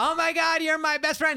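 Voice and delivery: put-on very high, loud drunk girl voice yelling. Describing two drunk friends talking over each other, imitating drunk girls yelling. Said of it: "they both yell at the same time".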